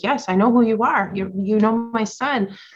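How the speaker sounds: mock thrilled, high, excited exclamation. Sharing a story, speaker acts out a woman who finished the story: imitating an excited woman. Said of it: "She got all excited".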